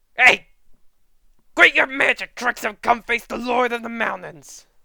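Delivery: furious angry shout, very loud and high. Storyteller voices Inosuke's line in an angry Inosuke voice. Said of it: "he's just angry, like it's classic Inosuke anger".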